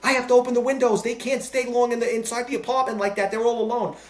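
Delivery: frantic, insistent, high screaming. Retelling a woman who got in the speaker's face, imitating her screaming. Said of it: "She starts screaming about her parrots".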